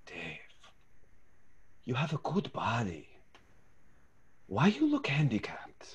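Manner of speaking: hushed, secretive whisper, slow, very close. Retelling what the coach whispered behind the ear: imitating a coach whispering. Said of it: "whispers and she goes".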